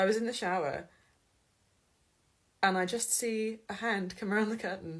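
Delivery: quivering, shaking, trembling voice. Recounting what they saw in the shower, the speaker talks with a shaking voice. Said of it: "my voice is shaking".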